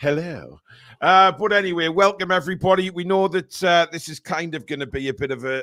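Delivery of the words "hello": sort of put-on radio announcer voice. Showing how he is normally greeted: radio presenter voice on hello. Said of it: "with a sort of radio voice going".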